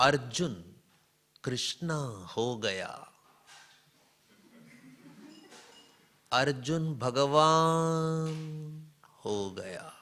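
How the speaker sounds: unhurried, pleasant, drawn-out, would-be wise tone. Retelling what a yoga teacher said, imitating slow nice speech. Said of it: "Slowly, nicely".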